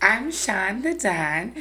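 slow, sexy voice. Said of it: "Why you sounding like that?".

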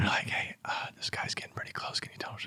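very soft, hushed whisper. Retelling what a crew said over comms before a hit, imitating their whisper. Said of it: "they're doing the whispering thing".

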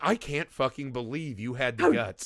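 indignant, incredulous, entitled-sounding outrage. Retelling a movie character's reaction to being spat on: imitating Karen-style outrage. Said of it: "her inner Karen comes out".

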